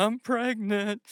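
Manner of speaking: put-on crying, hiccuping voice. Retelling what a kid said through hiccups and tears: imitating Callie crying. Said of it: "through her little hiccuping, crying self and says".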